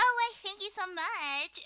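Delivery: put-on extra squeaky baby voice. Showing Chelsea how she'd say thanks, in an extra squeaky baby voice. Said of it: "make my voice even more squeaky".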